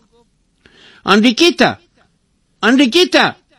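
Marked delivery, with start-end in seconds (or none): 1.0-3.3 loud, high-pitched voice calling out. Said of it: "با صدای بلند گفت".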